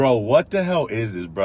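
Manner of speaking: ordinary talk, nothing marked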